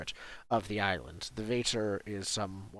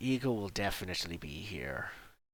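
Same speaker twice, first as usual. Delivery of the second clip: muttered under breath. Voicing a character answering about Eagle: muttered under his breath. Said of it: "says under his breath".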